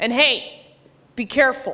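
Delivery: put-on stern tone. Retelling handing keys to the valet guys, acting very stern. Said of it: "say very sternly".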